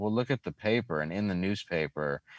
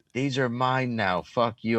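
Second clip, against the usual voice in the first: put-on rowdy, high-pitched drunken yell; 5 semitones higher, 4 dB louder than usual. Retelling throwing soda bottles into the car while drunk: imitating own drunken yelling.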